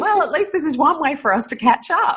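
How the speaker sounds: high, dry ironic tone. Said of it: "It's like".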